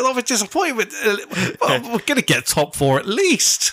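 very high-pitched, sing-song, swooping pundit voice. Retelling a Sky interview, answering the interviewer: imitating Jamie O'Hara. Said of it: "That's a great impression".

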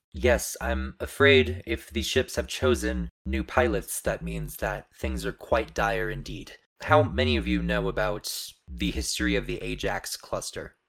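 robotic, grave, formal machine voice. A robotic guardian program gravely confirms that dire times are upon them and asks what they know of the region's past, holographic AI guardian robot. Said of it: "almost living looking hologram that is very definitely robotic in appearance. ... the AI that runs this place".

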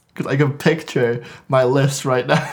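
words broken up by laughs throughout. Imagining their own album ranking list, laughing while talking. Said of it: "I'm laughing".

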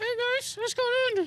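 high-pitched ventriloquist voice without moving lips. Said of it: "I would picture you going".

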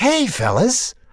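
high, sweet, friendly voice, totally sweet. Retelling a greeting in a dressing room: imitating Jack Lemmon, friendly and sweet. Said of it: "with total friendliness and sweetness".

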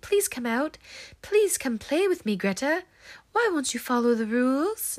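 put-on high, creepy little British boy voice. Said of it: "this little boy voice saying".

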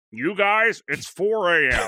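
very slow, high, drawn-out put-on cartoon dad voice. Voicing a character in an improvised scene: Homer Simpson voice. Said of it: "That's pretty good".

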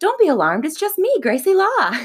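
high, polished, well-delivered line. Recounting a scene, quoting Gracie Law's line as she says it. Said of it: "She goes".

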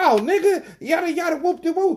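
mimicked heated outburst. Retelling how people reacted to a gentle approach: imitating someone turning up angrily. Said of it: "these motherfuckers turn up on me like".

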